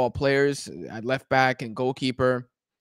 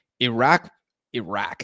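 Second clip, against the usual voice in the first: slipped-in American pronunciation of Iraq; 2 semitones lower than usual. Speaker announcing an upcoming match to predict, slipping into an american accent. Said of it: "Did you hear my goddamn American accent come out?".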